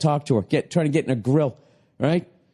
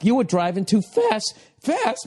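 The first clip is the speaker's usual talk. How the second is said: put-on swooping, voice-cracking shout, climbing high; 6 semitones higher than usual. Retelling yelling at the TV while watching with their wife, voice cracking. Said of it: "My fucking voice cracking".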